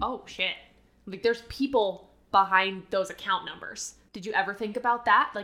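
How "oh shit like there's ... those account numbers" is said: normal talking voice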